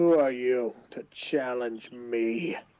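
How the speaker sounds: very slow, drawn-out creature voice, every word dragged. Voicing Gorn confronting the party: Gorn voice. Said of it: "he just looks at you and he just goes".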